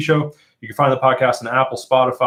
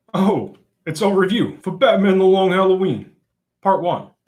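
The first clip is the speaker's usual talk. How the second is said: corny, bad put-on movie gangster voice, pitched up; 7 semitones higher than usual. Host opening the show's review episode, in a bad gangster impression. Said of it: "That is my bad gangster impression".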